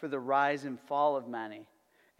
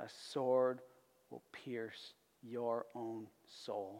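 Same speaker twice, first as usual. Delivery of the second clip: put-on grave, hushed, solemn voice; 3 semitones lower, 8 dB quieter than usual. Retelling a man's words to a teenage girl: imagined solemn voice. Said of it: "in a solemn voice".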